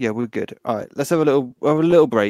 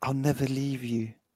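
soft half-whisper, very quiet, barely audible; 9 dB quieter than usual. Character held in a tight embrace as the place falls apart, half-whispering in his ear. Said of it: "I whisper in his ear".

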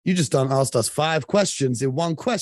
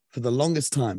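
plain

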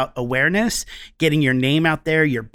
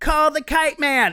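mock shrill, very high shouted group yell; 12 semitones higher than usual. Retelling how friends answer the old commercial question: imitating friends yelling. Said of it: "everybody yells".

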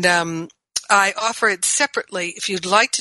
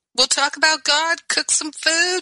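cheerful, much higher-pitched voice. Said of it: "And my friends would be like".

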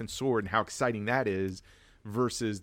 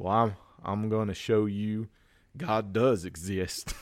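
imitated Alabama accent. Retelling Nicolas Cage's response to the others, in a put-on Alabama accent. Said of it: "Here Alabama it comes, everybody. Accent".

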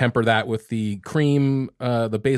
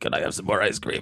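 breathy, whispered voice of a slinking creature; 5 semitones lower, 6 dB quieter than usual. Recalling how she would slink out and ask for something: golem voice. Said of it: "I was more like a golem".

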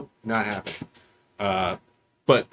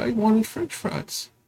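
mock very high, tearful little kid voice; 12 semitones higher than usual. Retelling what a crying daughter said from the back seat: imitating a crying child. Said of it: "I hear her crying in the back of the car".

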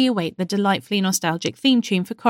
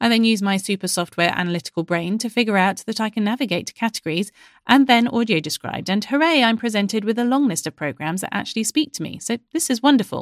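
ordinary talk

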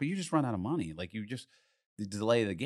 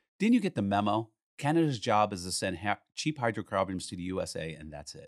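ordinary talk

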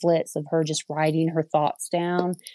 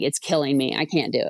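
mock overdramatic, whining delivery. Retelling complaining to mom about a tutor, imitating own overdramatic complaint. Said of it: "over dramatic about it".

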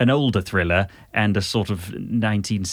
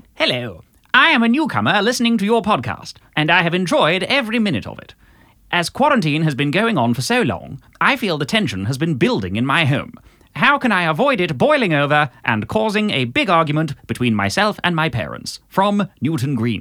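vintage cinema newsreel announcer voice, pitched up; 7 semitones higher than usual. Rereading the listener's letter in a fast-talking old newsreel style: old British Pathé newsreel voice. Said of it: "an old, uh, British Pathé".

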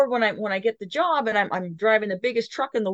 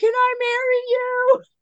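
very high, very slow, drawn-out yell; 14 semitones higher, 4 dB louder than usual. Recalling the instructor on the radio during excavator loading, retelling a yell over radio. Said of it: "He's yelling on the radio".

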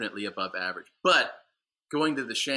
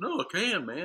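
high, goofy drawl, words stretched out; 8 semitones higher than usual. Retelling a hallmate's claim that he can dunk: imitating a goofy drawl. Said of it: "this goofy drawl".

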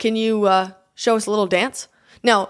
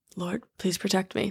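put-on mutter under the breath, quieter; 2 semitones lower, 10 dB quieter than usual. Retelling a prayer before attempting a stunt: imitating muttering under breath. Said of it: "under my breath".

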